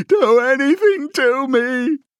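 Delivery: very high, shrill, loud, stretched-out pleading yell. A man threatened with Room 101 yells at the officer. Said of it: "he yelled".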